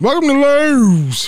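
put-on loud Baltimore accent with hard stress on O and W. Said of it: "strong emphasis on the O and the W".

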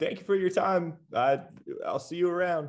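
overly friendly, very high-pitched delivery. Character gives a big wave and bids farewell before leaving: super friendly. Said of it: "just like super friendly".

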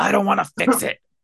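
high, rough, creaky demon voice. Retelling a story where she refuses the professor's fix: Jean Grey's demon voice. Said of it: "like her demon voice comes out".

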